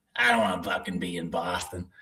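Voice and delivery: bad, fake put-on Boston accent. The speaker tries an accent, then admits it was the worst: bad Boston accent. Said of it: "that was the worst accent ever".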